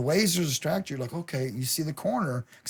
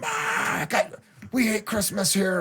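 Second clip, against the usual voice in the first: in-character monster voice, pitched up; 5 semitones higher than usual. Retelling scaring visitors with a chainsaw while in character: put-on chainsaw scarer voice. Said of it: "I got this total voice".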